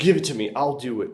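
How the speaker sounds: fed-up, sheepish, frustrated and embarrassed tone. Retelling a dinner where the husband grabs the salt mill: imitating a frustrated husband. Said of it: "you could hear in his voice".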